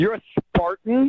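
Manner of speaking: scornful, full of disdain. Reacting on the phone after learning of the rival school: disdain in the voice. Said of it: "so much disdain in your voice".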